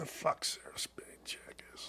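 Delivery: barely audible, very quiet whispered mumble. Insulting someone while ranting, mumbling under breath. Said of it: "I'm mumbling under my breath".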